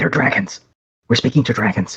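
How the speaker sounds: loud, carrying, barely hushed stage whisper. Whispering to a companion while in front of dragons, in a loud stage whisper. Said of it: "you're whispering quite loudly".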